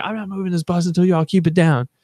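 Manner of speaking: mock furious, very high, angry shriek. Retelling how the bus driver screamed over the laughing passengers, retelling an angry scream. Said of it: "screamed over them like".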